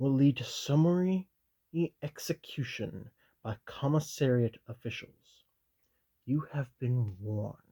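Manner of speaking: ordinary delivery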